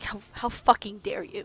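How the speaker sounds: hushed, growled whisper. Narrating the game, voicing the figure struck in the shoulder: growling voice. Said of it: "he growls at you. He's just like".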